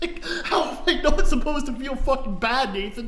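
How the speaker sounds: high-pitched, laughing, exasperated tone.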